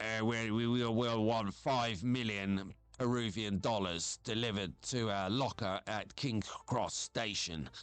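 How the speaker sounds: disguised, robotic voice-encoder voice. Imitating a kidnapper on a voice encoder: imitating a robotic voice encoder. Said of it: "And it sounds like a robot".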